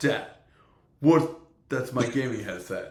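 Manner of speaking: put-on young nine-year-old boy's voice. Acting out his nine-year-old finding him in the gaming headset: imitating his son. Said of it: "They'll be like".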